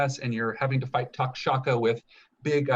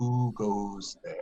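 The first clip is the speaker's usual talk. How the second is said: huge serpent voice calling down; 4 semitones lower, 3 dB quieter than usual. Voicing a giant dream snake speaking to the group: giant dream snake voice. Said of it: "bows its head down towards you guys and says".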